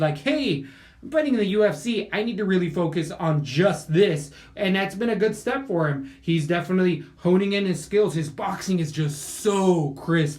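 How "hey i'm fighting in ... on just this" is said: ordinary talk, nothing marked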